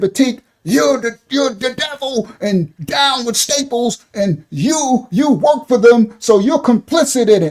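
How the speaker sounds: put-on, accusing, loud calling out. Acting out a made-up example to Batik: pretend yelling across the street. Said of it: "and I'm across the street, I say".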